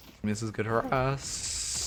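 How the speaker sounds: voice cracking. Commenting while going back over play, voice cracking. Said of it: "Oh no, the voice crack".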